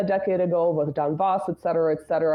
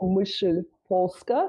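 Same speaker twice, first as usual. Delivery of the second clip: Polish words in a put-on Russian accent. Introducing a guest's work, saying a Polish title; Russian accent. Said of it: "I'm going to say this with a Russian accent".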